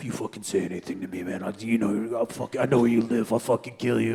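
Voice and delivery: put-on menacing voice. Retelling voicemails received after an arrest: imitating a menacing death threat. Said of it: "death threat voicemails".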